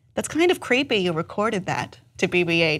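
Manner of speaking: normal talking voice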